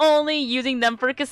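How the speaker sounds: ordinary delivery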